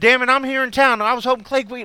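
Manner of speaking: very high, very loud put-on Texas twang. Acting out what someone said, in a put-on texas accent. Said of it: "I don't know where that fucking accent came from".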